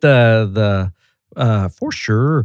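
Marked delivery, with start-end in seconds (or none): 1.7-2.5 clumsy put-on Minnesota accent, stretched long o's. Imitating how she greets someone walking in the door: imitating a Minnesota accent with long O's. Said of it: "I'm horrible at an accent".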